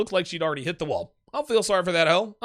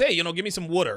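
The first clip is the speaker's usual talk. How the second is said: put-on Delaware County accent. Answering a viewer comment, imitating a girl: imitating a Philly Delco accent. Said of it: "Philly Delco accent".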